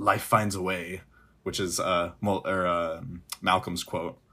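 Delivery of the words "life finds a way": put-on muttered aside. Retelling a film scene with the kids: Grant muttering under his breath. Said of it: "under his breath says".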